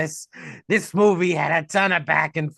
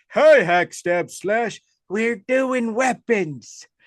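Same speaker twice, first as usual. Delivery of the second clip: put-on old man voice, pitched up; 5 semitones higher than usual. A host introduces the weapons segment in an old man voice. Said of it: "This is my old man voice".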